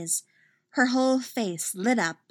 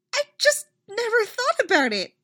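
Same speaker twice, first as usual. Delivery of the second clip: squeaky, very high-pitched little voice; 14 semitones higher, 4 dB louder than usual. A girl answers after hearing an unexpected admission about Ladybug: squeaking. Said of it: "she squeaks".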